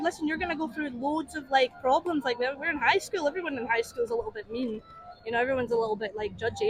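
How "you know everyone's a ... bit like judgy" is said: ordinary talk, nothing marked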